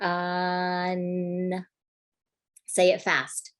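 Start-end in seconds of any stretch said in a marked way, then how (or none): 0.0-1.7 word said very slowly, sounds drawn out. Teacher showing students a sound-blending game, saying a word very slowly. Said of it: "say a word very slowly".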